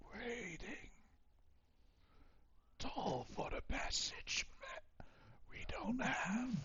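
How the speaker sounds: raspy whispered voice. Voicing a character in a role-play scene, in a raspy whisper. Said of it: "in this like raspy whispered voice".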